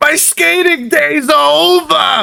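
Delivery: very high sobbing, stretched very long. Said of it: "he falls to the ground weeping".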